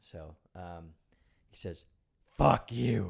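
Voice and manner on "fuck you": very loud, booming demonic yell. The speaker retells a voice yelling back from behind a door, devil-like voice. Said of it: "in a voice just like that".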